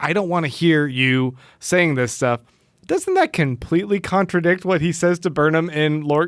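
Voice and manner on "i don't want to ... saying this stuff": normal talking voice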